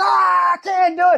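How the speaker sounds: put-on high, drawn-out, ragged, creaky scream. Retelling a story where a professor cries out: imitating a professor screaming. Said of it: "screaming, he's like".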